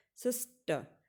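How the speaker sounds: sister stressed on first syllable sis. Explaining stressed syllables with the word sister: stress on first syllable sis. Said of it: "आप सिस के ऊपर ज़्यादा दबाव डालते हैं".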